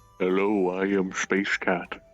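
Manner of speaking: put-on very deep voice. Suggesting a voice for a character: deep Space Cat voice. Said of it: "give her a really deep voice, like".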